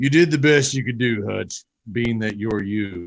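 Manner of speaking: dark, low, deep villain voice, dropped in pitch. Quoting a villain's line from a movie in the actor's villain voice. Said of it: "That just sounded like your [name]".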